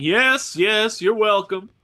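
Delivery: triumphant, loud, drawn-out shout. Trudging through the streets past the elated crowd, the character is yelling. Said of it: "I'm yelling".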